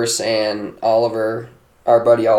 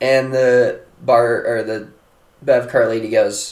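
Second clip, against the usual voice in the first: ordinary delivery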